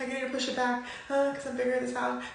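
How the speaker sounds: mock voice heavy with guilt. Retelling own past words while feeling all guilty: retelling own guilty-sounding voice. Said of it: "it was, like, in my voice".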